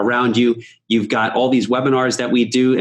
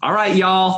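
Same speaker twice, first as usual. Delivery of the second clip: Texas accent slipping out, pitched a touch up; 8 semitones higher than usual. Wrapping up a webinar and addressing the audience: texas accent. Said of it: "That's my Texas accent coming out".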